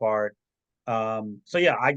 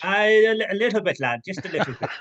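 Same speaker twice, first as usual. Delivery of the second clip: put-on Irish accent, higher and louder; 7 semitones higher, 4 dB louder than usual. Asked whether he is using the Irish accent, answering in an Irish accent. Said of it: "are you using the Irish accent".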